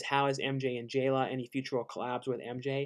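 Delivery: normal talking voice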